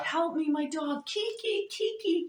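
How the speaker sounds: play-acted slow wailing screams, very high. Retelling how a man shouted in distress over a lost pet; imitating someone screaming. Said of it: "like really loud".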